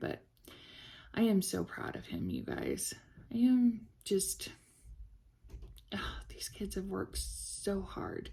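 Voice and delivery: half-whispered, breathy voice, fighting off tears. Talking to the audience about these hardworking kids, holding back tears. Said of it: "I'm trying really hard not to cry".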